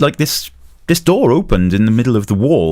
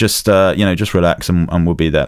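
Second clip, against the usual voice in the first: plain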